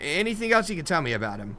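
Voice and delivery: ordinary delivery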